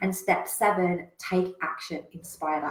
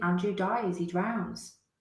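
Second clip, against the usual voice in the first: ordinary talk, nothing marked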